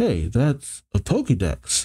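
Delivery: plain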